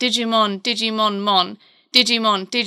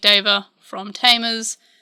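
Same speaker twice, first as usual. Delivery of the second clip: plain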